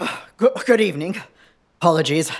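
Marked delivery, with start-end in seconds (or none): 0.4-1.2 winded, breathless, out-of-breath voice. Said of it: "I'm a bit out of breath".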